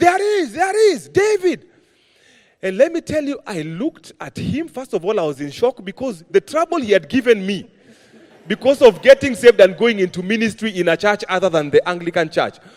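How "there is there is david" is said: shrill, high, slow, drawn-out proclaiming shout. Retelling how the father shot up at a burial: retelling a shout. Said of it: "he shouts".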